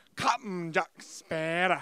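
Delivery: overdone heavy stress on Captain and Sparrow. Imitating a game's voice actor greeting a pirate: imitating the actor's overemphasized delivery. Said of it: "That's how he fucking talks".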